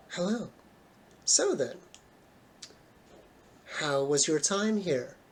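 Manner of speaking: hushed, quiet, echo-like voice. Voicing Hecate as she greets the players and asks about their time: quiet, echoing voice. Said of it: "she speaks in a quiet, echoing sort of voice".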